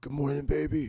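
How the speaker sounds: woman's morning-after, just-woken voice. Retelling waking up next to Tiffany after a one night stand, imitating Tiffany's voice. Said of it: "she hits you with the voice".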